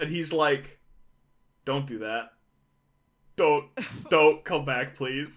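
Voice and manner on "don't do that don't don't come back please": put-on begging, clearly upset, pleading. Retelling a father's reply on the phone: imitating an upset plea. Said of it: "seems so upset about the idea of her coming back".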